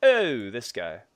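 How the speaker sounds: Italian-American sounding speech. Showing how he talks when fighting zombies, in a Sopranos-style Italian accent. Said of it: "I get really Italian when I fight zombies".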